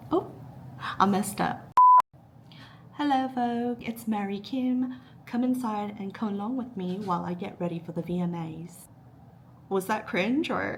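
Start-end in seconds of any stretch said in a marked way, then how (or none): 2.9-8.8 put-on British accent. Pretending to film a Vogue get-ready video: put-on British accent. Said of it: "did I sound British?".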